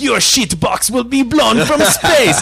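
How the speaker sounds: over-the-top put-on Russian accent. Retelling a film's space communist villain's threat: put-on russian accent. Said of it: "he's got a Russian accent".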